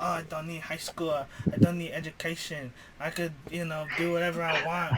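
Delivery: fake, put-on Mexican accent. Imitating people who didn't want to be in class, fake Cambodian accent. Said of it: "such a Mexican accent?".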